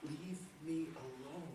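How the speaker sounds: very quiet, barely audible, fading away. Retelling a wounded man's words as he fades: imitating a barely audible voice. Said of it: "This time barely audible".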